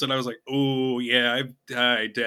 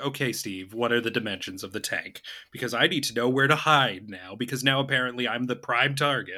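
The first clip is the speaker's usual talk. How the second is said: ordinary talk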